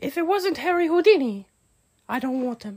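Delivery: very high-pitched put-on woman's voice. Continuing a bit as a woman character, in a put-on lady voice. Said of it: "your lady voice was the Lucky Charms cereal leprechaun".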